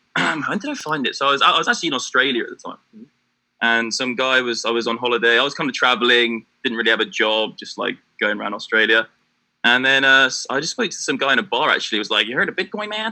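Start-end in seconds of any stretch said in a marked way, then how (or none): 12.2-13.1 put-on American accent, very high pitch. Retelling what a guy in a bar said to him, put-on American accent. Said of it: "No, that's American".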